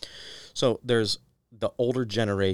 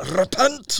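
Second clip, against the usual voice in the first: very high, loud, put-on Scottish accent; 8 dB louder than usual. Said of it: "In my mind, that's how it always happens".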